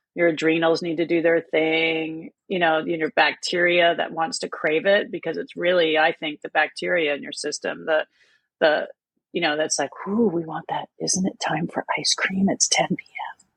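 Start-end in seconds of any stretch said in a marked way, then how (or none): 10.1-13.4 playful put-on whisper, slower. Voicing the gut bacteria that crave ice cream, in a mock whisper. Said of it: "they'll whisper in your ear".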